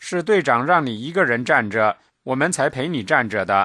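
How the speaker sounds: ordinary delivery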